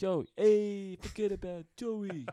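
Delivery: put-on Boston accent. Joking about working on a Boston accent: put-on Boston accent. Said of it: "work on my Boston accent".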